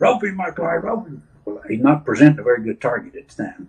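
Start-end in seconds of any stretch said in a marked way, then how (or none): 0.0-1.2 put-on high hollering yell. Retelling a rodeo wreck, a partner yelling at him: imitating someone hollering. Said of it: "he's hollering at me".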